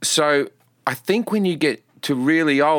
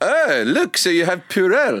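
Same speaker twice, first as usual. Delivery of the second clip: mock South African accent, higher pitch; 4 semitones higher than usual. Showing another speaker what the South African accent sounds like: put-on South African accent. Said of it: "complimentary and patronizing".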